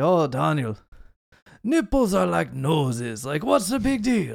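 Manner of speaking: clumsy put-on German accent, swooping, slipping into Italian. Retelling what friend Chris always said on visits to America, imitating Chris, accent turning Italian. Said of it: "I don't know why he turned Italian".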